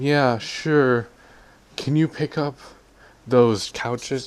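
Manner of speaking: sarcastic, snippy, snarky, slow and high. Retelling how they answered a request for information: imitating a sarcastic, snarky reply. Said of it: "they were trying to be really sarcastic or snarky".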